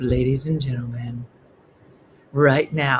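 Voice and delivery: low, smooth, silky roller rink jazz announcer voice. Recalling the roller rink announcer coming on, in a smooth jazz voice. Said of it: "like a smooth jazz voice would come up".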